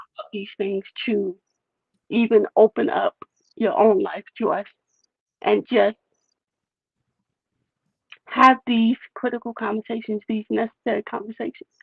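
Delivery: fighting tears, near crying. Speaker thanks a guest for opening up their life: holding back tears. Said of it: "I'm trying to figure out how to do this without crying".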